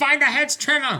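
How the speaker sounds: shouting. Bracing the shed door in character, calling to trevor: in-character shout. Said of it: "I'm just shouting".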